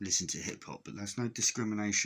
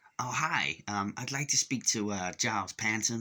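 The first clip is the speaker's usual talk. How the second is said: bad put-on American accent, drawn out; 2 semitones higher than usual. Acting out an American guy phoning a cousin's house: crap American accent. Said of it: "it's a crap American accent".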